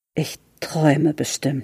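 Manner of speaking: quiet murmur to himself. Fritz speaks to himself, murmured. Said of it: "murmelte Fritz".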